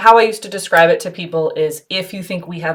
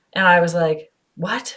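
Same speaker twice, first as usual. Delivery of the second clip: usual speaking voice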